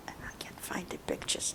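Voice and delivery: hushed whisper. Telling about a photo of a well from a past visit, whispering.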